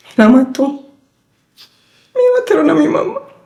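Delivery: high, desperate wail. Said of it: "Yo estaba desesperada".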